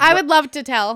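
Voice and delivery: keen, eager, raring-to-go excited tone. Offering to tell the story to the others: sounding excited. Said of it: "you sound pretty excited".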